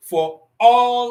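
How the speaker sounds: the word all stressed, high and loud. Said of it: "I want to say emphatically".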